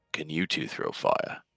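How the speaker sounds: quiet, slow muttering. Raleigh turns back to the group mid-conversation: Raleigh muttering under breath. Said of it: "and kind of says under his breath".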